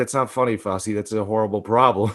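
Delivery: ordinary delivery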